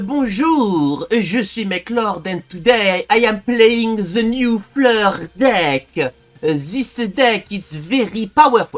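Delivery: fake French accent, drawn out. Introducing a new card deck in a video, in a fake French accent. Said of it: "I can't do this accent all video".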